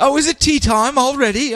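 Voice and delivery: very high, bad, fake British accent. Slipping into an accent he says he just absorbs, in a bad british accent. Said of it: "a bad British accent".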